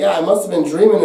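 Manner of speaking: plain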